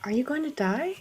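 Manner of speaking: whispered. Voicing a character leaning close to look at a wound: whisper. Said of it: "just whisper".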